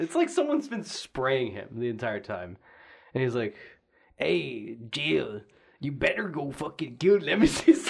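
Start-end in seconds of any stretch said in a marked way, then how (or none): 4.2-7.9 put-on Mexican accent. Imitating a game character telling Jill to kill Nemesis: Carlos with Mexican accent. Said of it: "that was my Mexican".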